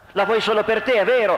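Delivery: furious yelling, angry shout, pitched high. Alex shouts at Victor, who shields Natascia from him; shouted angrily. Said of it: "Alex gridò da arrabbiato".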